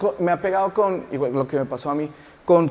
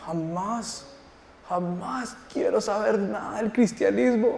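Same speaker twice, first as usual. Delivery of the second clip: mock boy's voice, angry outburst; 3 semitones higher, 5 dB quieter than usual. Retelling what a boy said about his mother: imitating an angry boy. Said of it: "empezó a hablarme con una ira".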